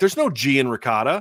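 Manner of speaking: ordinary talk, nothing marked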